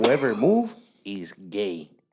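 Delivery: put-on slight Mexican accent, low and very slow. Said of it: "little Mexican accent".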